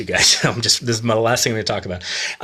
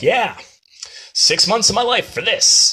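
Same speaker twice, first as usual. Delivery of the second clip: put-on sarcastic, self-mocking tone, very high and slow; 11 semitones higher than usual. Retelling a juggler's line after polite claps: imitating a sarcastic self-deprecating quip. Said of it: "kinda sarcastic, self-deprecating way".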